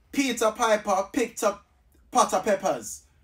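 put-on Jamaican-accented speech. Saying a tongue twister when told to do it Jamaican: Jamaican accent.

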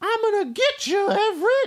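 very high, drawn-out, mouse-like squeaky voice. Retelling a story scene where a man threatens Everett, high squeaky voice. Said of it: "he talks in a high squeaky voice".

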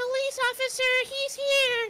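put-on girly voice. Dad faking a distraction from the pretend police officer, fake girl voice. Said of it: "Let me fake a girl voice".

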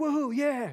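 play-acted very high, giddy, excited cheering whoop. Joking that listeners might cheer at a word in scripture: imitating excited listeners. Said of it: "I don't want you all getting excited".

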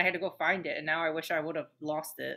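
normal talking voice

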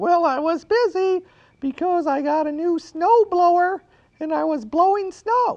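very high-pitched puppet voice. Asked by the storyteller why he wasn't listening, reply in Baba Looey puppet voice. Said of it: "He lives in the cactus house right here".

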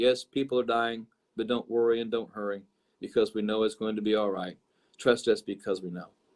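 very slow, very low, flat, dragging monotone drone. Retelling what a woman literally said: imitating her very slow monotone. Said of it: "as she spoke in very slow monotone".

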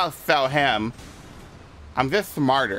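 put-on acted girlish character voice.

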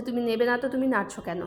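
usual speaking voice

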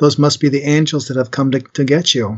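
normal talking voice

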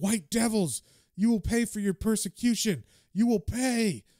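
enraged, furious, high yelling, full of threat. Retelling a comic scene where Hota yells at the diner crowd: imitating Hota yelling. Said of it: "he's yelling at them".

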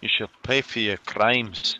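put-on Scottish-accented voice. During a game session, a player speaks as her character in a Scottish accent. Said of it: "When did she turn Scottish?".

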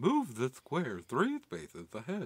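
friendly, sing-song nerdy robot voice. Mocking a tutorial level's instructions in a nerd robot voice. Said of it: "that's my nerd robot".

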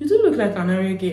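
ordinary delivery

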